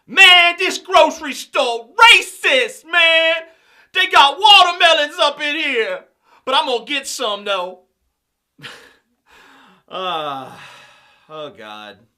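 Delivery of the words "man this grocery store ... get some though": put-on high, loud mock street dialect voice.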